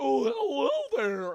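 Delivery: very high-pitched, loud cartoon voice. Retelling the first episode, the character opening the door: Uncle Grandpa impression. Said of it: "he's like".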